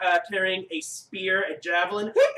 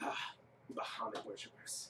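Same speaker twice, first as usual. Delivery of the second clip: angry grumbling under breath, lower and quieter; 11 semitones lower, 22 dB quieter than usual. Voicing an angry javelin thrower as players leave: muttering angrily under her breath. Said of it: "saying, uh, obscenities under her breath".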